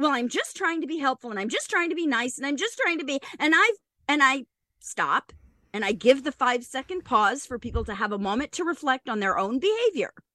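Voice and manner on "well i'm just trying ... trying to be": normal talking voice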